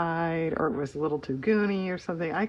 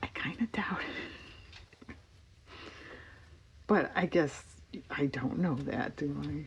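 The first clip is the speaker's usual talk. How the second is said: whispering, much quieter; 2 semitones lower, 8 dB quieter than usual. Talking through a page layout half to themselves, whispering.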